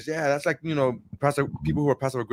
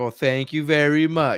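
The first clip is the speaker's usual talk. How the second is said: put-on sarcastic tone, slower; 2 semitones higher than usual. Speaker retelling a Simpsons scene, quoting a character's thanks: mock-sarcastic thank you. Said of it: "my tone sounds a bit sarcastic".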